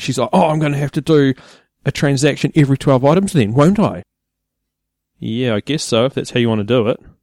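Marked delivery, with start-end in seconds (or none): 0.3-4.0 high, panicked, ranting voice. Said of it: "she starts nutting out".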